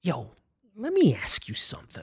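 put-on suspicious voice. Retelling a first meeting with him: imitating a suspicious tone. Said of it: "talking to me with that tone, like, suspicious".

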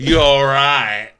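put-on menacing taunting tone. Retelling a scene where a character taunts Jason: imitating a pseudo-threatening taunt. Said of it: "a pseudo-threatening way".

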